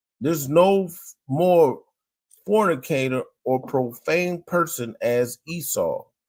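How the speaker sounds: ordinary delivery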